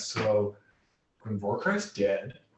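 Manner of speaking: said softly, quiet and hushed, under the breath. Telling a kobold news in character, speaking quietly. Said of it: "So quietly in Draconic".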